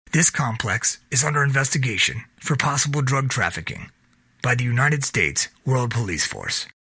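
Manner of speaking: ordinary delivery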